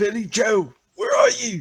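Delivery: high, loud stage whisper, called out. A player speaks in character, calling out to a companion, loud whisper. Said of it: "do the loud whisper and ask".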